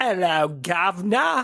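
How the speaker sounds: fake, put-on British accent. After claiming they sound pretty British, showing off a mock British accent. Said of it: "I think I sound pretty British".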